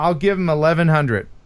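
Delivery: ordinary talk, nothing marked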